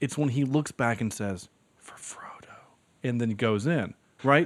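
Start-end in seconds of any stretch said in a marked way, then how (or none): 1.8-2.5 imitated whispering, quieter. Quoting a rallying line from a movie: whispering like Aragorn. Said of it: "that's what he whispers it".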